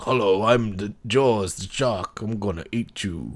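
talking shark voice. Joking about a misremembered movie scene, voicing the shark: Jaws shark voice. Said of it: "when the shark comes out and he's like".

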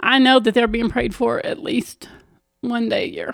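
choked-up voice, thick with emotion. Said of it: "I'm gonna get all choked up".

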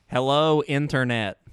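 loud, mechanical, robot-like voice. Andrew, called over to greet the podcast, says hello sounding like a robot. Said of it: "why do you sound like a robot".

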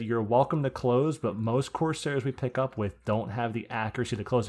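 usual speaking voice

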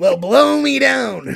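gruff, raspy, slow, drawn-out, loud cartoon sailor voice. Talking about who could do that voice, giving a quick Popeye voice. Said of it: "I'll give you a quick Popeye".

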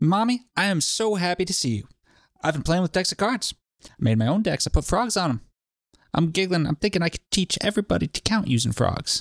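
put-on young child character voice. Reading a blog post aloud in character as the child: voicing Charlie. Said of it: "I got Charlie".

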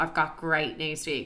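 ordinary talk

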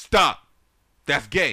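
very loud, shrill, screamed outburst. Quoting a line from someone's stage joke, screamed in an imitated voice. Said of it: "scream in his voice, ... You gotta say it like that because it's from his joke".

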